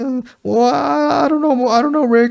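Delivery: very high, slow, hesitant stammering. Retelling a movie scene, imitating Robert Pattinson doing a Morty voice. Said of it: "that's the voice he was doing".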